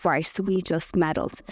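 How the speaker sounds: ordinary delivery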